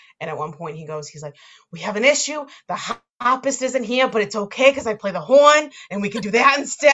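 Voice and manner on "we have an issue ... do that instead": put-on heavy, laid-on, loud, thick Boston accent. Describing a movie and quoting its wedding planner: wicked thick Boston accent. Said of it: "And it's like the wicked thick Boston".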